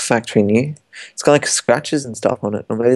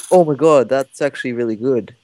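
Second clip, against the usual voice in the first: ordinary delivery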